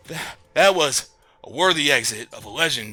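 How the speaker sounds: out of breath, huffing. A character congratulates the crew on a legendary exit, out of breath. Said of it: "huffing and puffing".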